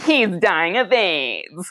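odd, weird preachy evangelical lilt. Retelling a line from a documentary about evangelicals: imitating a weird evangelical intonation. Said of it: "There's a weird intonation where she's like".

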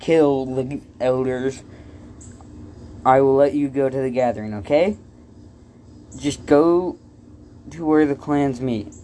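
plain reading voice

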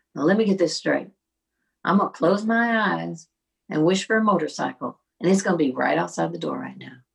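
put-on loud, deep Southern accent, thick with sarcasm. Retelling what a friend said on coming in: mock-sarcastic friend, southern accent. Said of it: "right now you're being so sarcastic".

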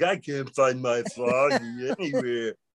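dumb, dopey, slow, sluggish delivery. Recounting a line read after Lonnie asked for a stupid, slow voice. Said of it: "just sound stupid and slow".

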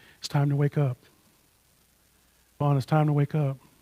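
soft, ever so gentle, coaxing voice. Remembering oversleeping as a kid, quoting his mother, imitating her gentle waking. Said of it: "my mother would come in and ever so gently".

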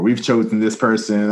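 plain

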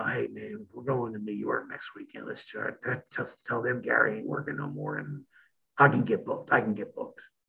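secretive, hushed whispering. Imitating her whispering in the partner's ear: imitating someone whispering. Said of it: "she's whispering".

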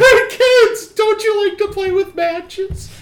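very high, loud, drawn-out cartoon voice. Acting out the character's line to kids: gingerbread man from Shrek voice. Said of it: "that sounds like the gingerbread man from Shrek".

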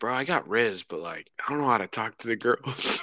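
put-on muttering under breath. Retelling what an awkward kid said to a church leader: imitating muttering under breath. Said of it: "he kinda says it under his breath".

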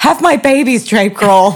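shouting. Retelling what was yelled at a concert: retelling own yell. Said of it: "I think I yelled something like".

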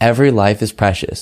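plain

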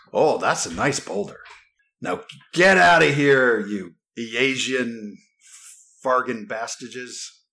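slow, drawn-out, hostile talking-bear voice. In a tabletop game, the game master speaks as an awakened bear, in a talking bear voice. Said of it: "You immediately recognize an awakened animal".

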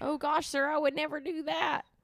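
very high, put-on old prospector voice. Quoting a movie character, making him sound like an old prospector voice. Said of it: "You make him sound like a, like an old like oil. ... like a prospector voice".

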